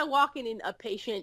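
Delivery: ordinary talk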